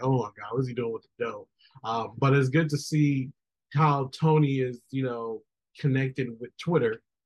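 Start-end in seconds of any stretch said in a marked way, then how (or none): 0.0-1.5 put-on voice while laughing. Speaker retells his wife's reaction to a clip he showed her, imitating Faye laughing. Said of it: "she was laughing like".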